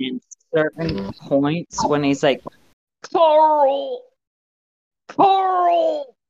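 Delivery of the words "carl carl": put-on very high, drawn-out call in an American accent. Speaker imitates Rick from a series calling out for Carl, in Rick's American accent. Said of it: "that's like a big meme".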